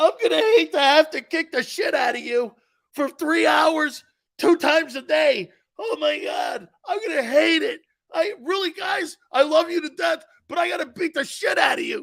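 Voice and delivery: high, tearful voice, talking while crying. Imitating a coach who cries while threatening his players: imitating Dick Vermeil crying. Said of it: "Dick's crying like this".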